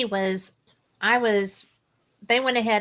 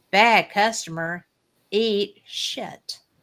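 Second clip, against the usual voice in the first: put-on drawn-out Southern accent. Retelling a stranger's words heard over the radio, slow southern drawl. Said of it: "real slow and southern".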